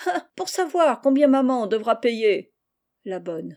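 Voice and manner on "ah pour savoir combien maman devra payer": sneering, with a mocking snigger running through. Narrator reads a character answering another's question, sneering snicker.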